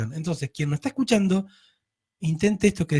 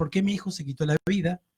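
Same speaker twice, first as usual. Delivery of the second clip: normal talking voice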